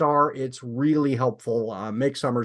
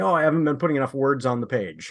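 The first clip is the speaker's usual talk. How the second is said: ordinary talk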